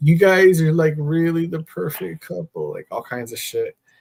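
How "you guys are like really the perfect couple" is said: play-acted crying, tearful, pitched up, emotional gushing. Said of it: "she fucking started crying, saying".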